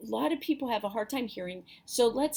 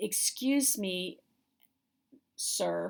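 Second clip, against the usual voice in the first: acted, very shaky, quavering, unsteady trembling voice; 2 semitones lower than usual. Speaker retells addressing a man at church, re-enacting a shaking voice. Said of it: "very shaking uh, voice".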